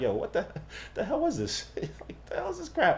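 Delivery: acted bewildered disbelief, laughing, confused outburst. Retelling how moviegoers reacted to a film: imitating people laughing in confusion. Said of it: "they started laughing like".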